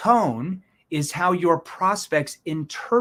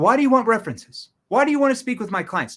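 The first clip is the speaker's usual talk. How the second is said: mock, put-on defensive tone, pitched higher; 5 semitones higher than usual. Explaining what not to say when asked for references: imitating a defensive prospect. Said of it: "If you get defensive".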